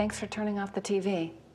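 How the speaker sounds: dull, level, flat monotone with no enthusiasm. Showing how a parent might thank their child, in a flat, unenthusiastic tone. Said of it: "if you currently sound like this".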